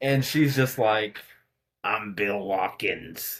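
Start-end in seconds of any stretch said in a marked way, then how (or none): 1.8-3.4 eerie, hushed, creepy possessed voice. Retelling an interview where a possessed little girl's voice changes: imitating a possessed girl's voice. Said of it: "her voice changes".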